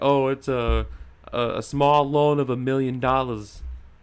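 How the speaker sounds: New York accent, attempted and clearly missed. Quoting a politician about a small loan, Bernie Sanders voice.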